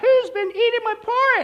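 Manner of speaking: put-on high, slow little baby bear squeak.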